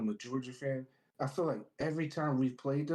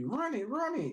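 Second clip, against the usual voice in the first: put-on screaming, very high; 11 semitones higher than usual. Retelling screaming at the TV for a player to run: imitating own screaming. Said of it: "I'm screaming at the T V".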